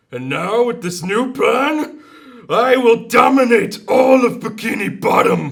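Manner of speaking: booming, high-pitched and slow, in a Jamaican accent. Doing an impression after being asked to do Plankton: Plankton voice with Jamaican accent. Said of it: "That's like Jamaican plankton".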